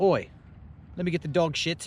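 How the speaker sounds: put-on New Zealand accent. Showing how a Kiwi customer asks at the convention booth, in a Kiwi accent. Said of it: "Let me give you a taste of the Kiwi accent".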